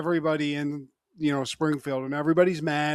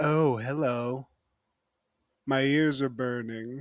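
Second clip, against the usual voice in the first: slow, deliberate, drawn-out villain-like drawl; 2 semitones lower than usual. Retelling a cartoon scene where a villain walks into a meeting: imitating Mr. Burns. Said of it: "Monty Burns just walks in, just".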